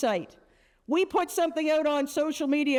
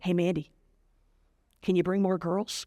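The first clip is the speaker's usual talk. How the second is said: put-on whisper, lower pitch; 8 semitones lower than usual. Retelling how teachers lean over and ask something: imitating a whisper. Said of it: "Why are we whispering?".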